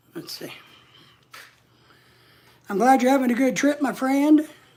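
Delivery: out of breath, catching breath. After sitting down to catch breath, replying to a friend's message, out of breath. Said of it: "catch my breath".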